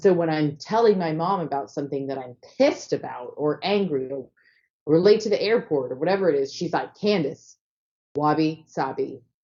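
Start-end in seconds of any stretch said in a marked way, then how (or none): 6.9-9.2 light, calming, coach-like pep tone. Retelling how mom answers when the speaker is angry: imitating mom, like a coach. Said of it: "she just starts to say it like a little, like a coach".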